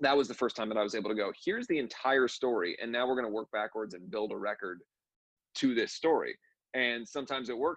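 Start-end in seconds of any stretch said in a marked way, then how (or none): none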